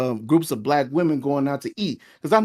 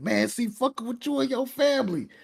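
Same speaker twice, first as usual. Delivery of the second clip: very high-pitched, angry, snapping outburst; 9 semitones higher, 5 dB quieter than usual. Retelling what a friend said after he got mad: imitating an angry friend. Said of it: "got mad".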